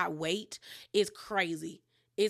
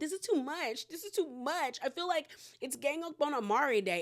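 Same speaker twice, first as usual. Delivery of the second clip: high, tearful crying voice, talking through sobs; 5 semitones higher than usual. Retelling a reality show scene, imitating Amari crying. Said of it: "Amari starts crying, talking about".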